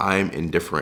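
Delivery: ordinary delivery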